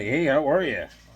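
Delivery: put-on suave flirty voice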